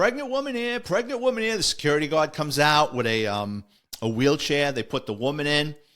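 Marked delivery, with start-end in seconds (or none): 0.0-1.6 put-on yelling and screaming, pitched way up. Driving into the emergency room with a woman in labor, retelling own yelling. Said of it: "I'm yelling and screaming".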